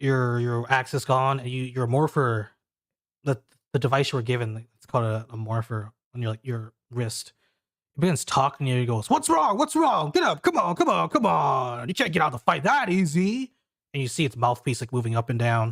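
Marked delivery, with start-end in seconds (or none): 9.1-13.5 put-on yelling, high-pitched and insistent. Describing a game, speaker acts out the wrist device urging the player up: retelling a yell. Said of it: "why are you yelling at me?".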